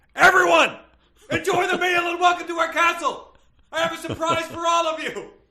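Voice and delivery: very high-pitched, loud, proclaiming shout. Reading a story, the king calls out to everyone at the castle meal: yelling. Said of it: "King Arthur yelled".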